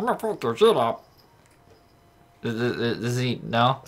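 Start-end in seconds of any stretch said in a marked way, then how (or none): 0.0-1.1 high, pitched-up cartoon-character voice. Giving Mudkip the voice he hears for it, in a Meatwad voice. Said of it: "like, meatwad voice?".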